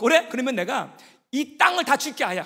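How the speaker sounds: loud, high, angry, exasperated, shouted. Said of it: "또 너무 화가 나갖고".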